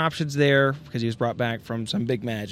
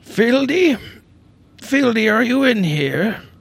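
put-on very high, loud old man voice; 12 semitones higher, 8 dB louder than usual. Game master voices a player's dad calling from the room's entrance, put-on voice for the dad. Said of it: "got to do a little voice here".

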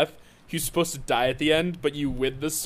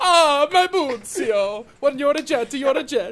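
exaggerated Italian accent, very high; 10 semitones higher, 4 dB louder than usual. Imagining a stage production with the gang as new immigrants, stereotypical Italian accent. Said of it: "stereotypical, like, fresh off the boat".

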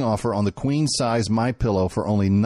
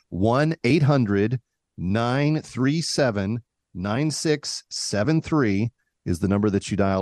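deliberately slow, much slower pace. Repeating the donation number for listeners after saying it too fast: said slower. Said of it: "I'll say it slower".

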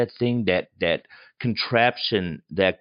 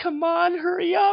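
mock screaming, pitched much higher. Recounting a scene, imitating a woman who is still screaming. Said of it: "And she's still screaming".

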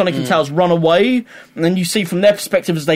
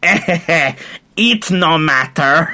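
put-on Italian American accent. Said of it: "Robotnik's voice goes a weird Italian American".

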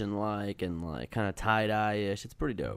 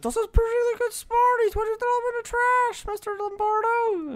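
put-on very high, angry, annoyed little kid voice; 4 dB louder than usual. Retelling a kid who got mad that his smarties were taken: mock-angry peewee kid voice. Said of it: "a little peewee voice being mad".

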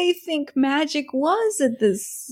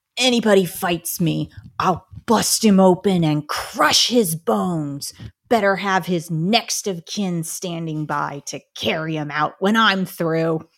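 low, dramatic, theatrical delivery; 8 semitones lower than usual. Asked by a co-host, the speaker reads a boxer's trash talk from the Iliad, as a dramatic reading. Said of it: "Give us a dramatic reading".

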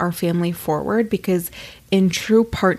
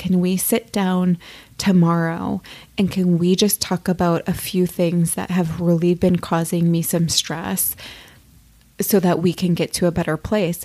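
usual speaking voice

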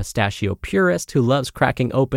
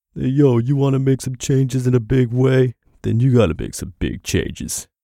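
gruff boxer tough-guy voice. Host quotes Rocky Balboa from Creed 2 in a Sylvester Stallone voice. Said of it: "I should do this in Sly's voice".

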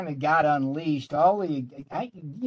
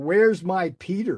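acted bellowing. Speaker retells the boss calling for him, retelling a bellow. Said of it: "he bellows like".

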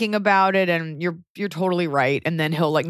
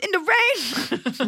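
very high, badly done nanny voice, Jamaican accent; 13 semitones higher than usual. Retelling a Jamaican nanny's reply: bad impression of Myrna. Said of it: "This impression is so bad".

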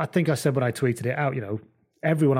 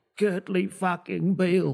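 put-on dying old man voice, pitched higher; 7 semitones higher than usual. Doing a niche impression on his deathbed: Michael Checker on his deathbed voice. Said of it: "Michael Checker on his deathbed".

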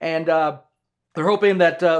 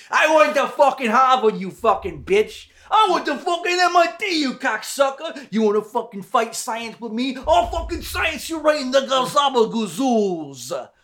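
put-on high Italian mobster accent; 8 semitones higher than usual. Doing a bit as a foul-mouthed scientist, italian mafia accent. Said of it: "Italian mafia scientists".

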